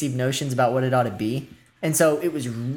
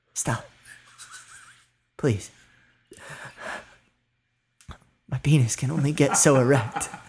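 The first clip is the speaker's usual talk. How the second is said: put-on theatrical stage whisper. Retelling what the man beside them in the theater said, in a stage whisper. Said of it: "in a stage whisper".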